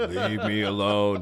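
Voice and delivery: fake, put-on macho manly voice. Imitating the other speaker telling people to leave him alone: put-on man voice. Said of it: "you had to use your man voice on".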